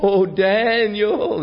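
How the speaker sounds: acted very high, drawn-out lamenting cry. Retelling the scripture story of the king calling out at the den, acting out a lamenting cry. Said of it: "he cried in a lamentable voice".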